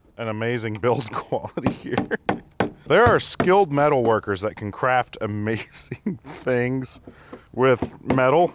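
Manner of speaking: speech mixed with laughter. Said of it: "I don't know why I'm laughing".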